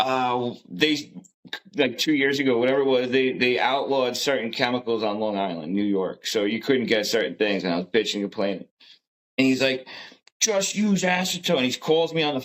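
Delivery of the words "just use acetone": put-on high-pitched angry yell. Retelling a phone call from Pops about chemicals: imitating someone yelling. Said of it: "He starts yelling at me".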